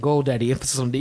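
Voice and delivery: ordinary talk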